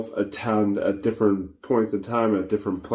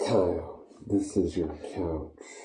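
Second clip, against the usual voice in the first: deep, very slow voice, every word drawn out; 4 semitones lower, 8 dB quieter than usual. Showing another speaker the voice to use: Darth Vader voice. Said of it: "or like the Darth Vader voice".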